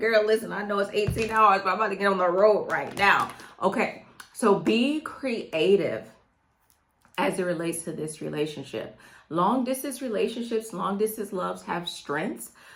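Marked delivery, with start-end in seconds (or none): 0.0-3.3 smitten, eager, keen man's voice, all in. Acting out a boyfriend's reply: imitating an eager boyfriend. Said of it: "He be like".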